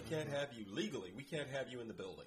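plain

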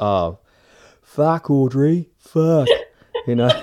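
loud, put-on Australian accent. Describing rewatching season 1, the speaker slips into an Australian accent. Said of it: "slip into an Aussie accent".

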